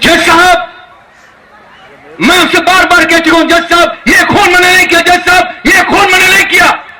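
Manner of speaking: theatrical movie-star delivery. Performing a courtroom scene for listeners to guess the star, famous film star's voice. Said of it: "मैं आवाज बोल रहा हूँ, उसको आप सभी पहचानते हैं".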